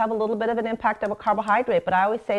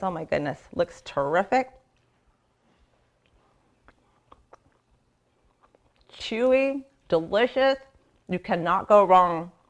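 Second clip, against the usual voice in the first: slow speech through a full mouth while chewing; 2 semitones lower than usual. Taking a bite of a just-baked cookie, talking while chewing. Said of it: "I shouldn't be talking while my mouth is still chewy".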